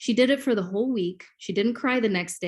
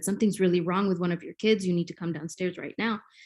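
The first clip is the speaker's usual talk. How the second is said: ordinary talk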